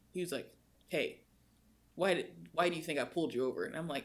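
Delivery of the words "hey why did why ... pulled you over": mock cocky, smug, rude cop voice, full of himself. Retelling what the officer said after pulling them over: imitating a smug officer. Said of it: "super smug dude".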